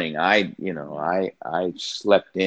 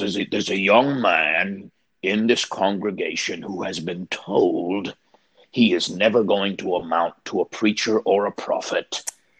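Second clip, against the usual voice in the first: put-on Cockney accent. Retelling a preacher's words at the end of his sermon: imitating Eddie's Cockney accent. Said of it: "he had a Cockney accent".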